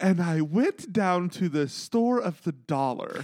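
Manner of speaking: high haughty posh woman voice. Quoting a line, the speaker does a Heather Dubrow impression. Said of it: "you can hear Heather Dubrow saying it".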